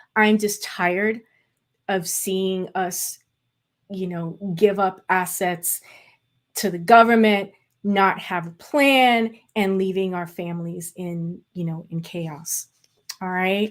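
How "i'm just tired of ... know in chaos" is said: moved, passionate, slightly emotional, heartfelt delivery. Sounding the alarm for the community, getting a little emotional. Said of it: "I get a little emotional about this".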